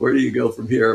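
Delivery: normal talking voice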